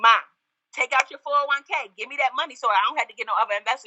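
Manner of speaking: high-pitched, fast, pushy and insistent delivery.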